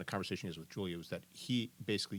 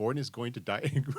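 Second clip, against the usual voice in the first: normal talking voice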